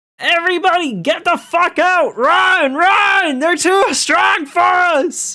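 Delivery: very high, all-out shouted yell, run drawn out. Narrating Terry's turn in the game, voicing Terry; Terry yelling. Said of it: "And Terry yells".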